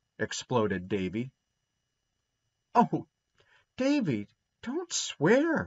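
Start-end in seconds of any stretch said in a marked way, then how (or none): 2.8-5.7 very high, drawn-out, dismayed gasp. Narrator reading one character's reply to another, gasping in dismay. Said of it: "gasped Dora in dismay".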